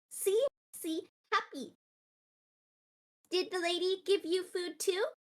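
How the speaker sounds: tiny, high little cat creature voice. Voicing a little moss cat running circles at a player's feet: voicing a little moss cat. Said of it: "the little, like, moss cat is going to sort of run in a circle".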